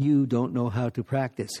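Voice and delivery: acted-out scolding tone with a hint of shouting. Retelling how he struck each person's shoulder and scolded them, retelling a loud scolding. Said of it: "he said in a loud voice each time".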